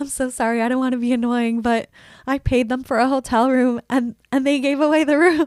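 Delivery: tearful, crying voice, talking through tears. Retelling walking out in tears to the hotel staff, imitating own crying. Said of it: "literally walk out like tears on my face".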